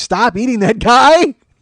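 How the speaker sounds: loud, slow police shout. Retelling a cop's warnings to a man eating a face: imitating a cop yelling. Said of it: "the cop yells".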